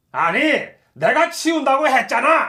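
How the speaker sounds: put-on angry tone. Recounting overhearing the director through the door, mock-angry director. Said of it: "원장님이 그렇게 화난 목소리는 처음이었어요".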